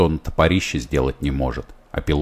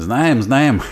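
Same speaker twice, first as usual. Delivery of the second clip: shouting, much higher and louder; 9 semitones higher, 5 dB louder than usual. Narrator reading a man's answer when asked if they know the workshop, shouting. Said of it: "закричал Григорьев".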